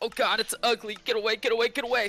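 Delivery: high yell full of disgust. Voicing a character who hates the sea, yelling at a creature: character yelling in disgust. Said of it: "so he's just gonna yell".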